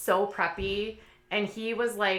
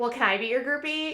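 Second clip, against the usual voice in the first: high, joking, tongue-in-cheek, facetious teasing put-on voice; 5 semitones higher than usual. Retelling a question to a musician after the show: imitating her own facetious tone. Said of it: "I was just being, like, facetious".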